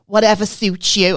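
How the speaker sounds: put-on very strong Scouse accent. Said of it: "she was so Scouse, she sounded Welsh".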